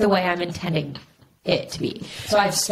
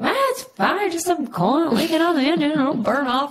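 put-on hillbilly voice, higher pitch; 8 semitones higher than usual. Retelling what the guy said about the smoking car: imitating the guy in a hillbilly voice. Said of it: "it went hillbilly in my head".

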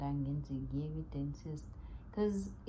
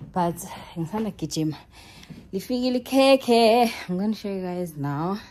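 out of breath, very loud, pitched up; 5 semitones higher, 16 dB louder than usual. Tell your audience you are about to show them something, out of breath. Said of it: "I'm out of breath".

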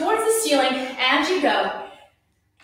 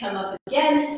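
normal talking voice

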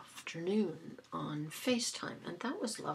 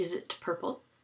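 mock blunt, matter-of-fact, flat deadpan delivery; 3 dB louder than usual. Retelling a question to the dentist about a new crown: retelling a flat-out question. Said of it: "flat out like that".

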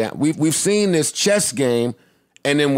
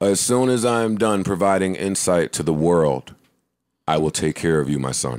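very deep, very low, slow, drawn-out voice; 8 semitones lower than usual. Answering a caller mid-recording in a Darth Vader voice.

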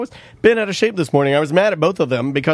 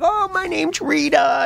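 put-on creaky, very high, slow, drawn-out old-lady voice; 11 semitones higher than usual. Retelling a daughter's costume act: imitating a put-on old lady voice. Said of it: "she's pretending to be an old lady".

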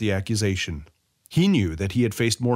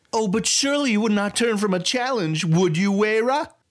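condescending, patronizing, very high-pitched voice; 12 semitones higher than usual. Sy challenges Wayra to a duel in front of his gang, in a patronizing manner. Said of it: "Sy said in a patronizing manner".

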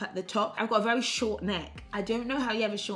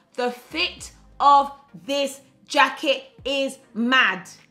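very loud, excited, drawn-out hollering; 5 semitones higher, 9 dB louder than usual. Speaker talking about the fit of a cream jacket, shouting. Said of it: "I'm shouting because it's absolutely crazy".

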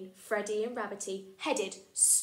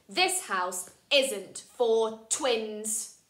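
domineering voice, louder; 4 dB louder than usual. Reading a story aloud, voicing George turning the twins away: bossy voice. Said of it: "He's got a very bossy voice".

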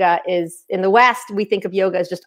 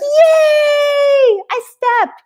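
put-on very high, tiny toddler chirp, drawn-out "yay"; 4 dB louder than usual. Telling about a two-year-old at the dog park, imitating a toddler. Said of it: "she'd be like".

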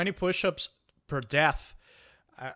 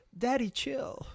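very high camp voice with vocal fry ending; 10 semitones higher, 4 dB quieter than usual. Quoting a line from a clip the group just watched: imitating vocal fry. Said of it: "that vocal fry".

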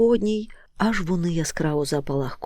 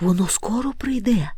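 quietly calling out with a higher pitch; 4 semitones higher than usual. The moomintroll calls to the Hemul wandering alone among the trees, quietly calling out. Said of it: "тихенько гукнув мумітроль".

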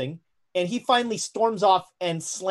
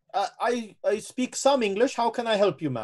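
put-on German accent; 3 semitones higher than usual. Voicing a German cook who answers a guest: intractable German character. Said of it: "He's playing up the intractable German for you".

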